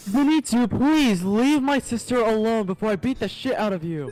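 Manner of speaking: very loud, high, belted anime-hero shout. Joking about Demon Slayer, one speaker does a Tanjiro impression. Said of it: "Just do a Tanjiro fucking impression".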